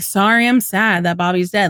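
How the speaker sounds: acted bratty, dismissive, blasé, offhand tone. Quoting Buck's reply again: imitating Buck's blasé tone. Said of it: "in such, like, a blasé way".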